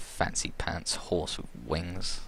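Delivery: slow, soft muttering aside under the breath. Voicing a character reacting to a winged horse: muttering under her breath. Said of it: "kinda says under her breath".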